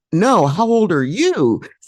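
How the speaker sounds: mock screaming, high-pitched and drawn out. Retelling a dream where a child screams a question: imitating someone screaming. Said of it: "they were screaming at me".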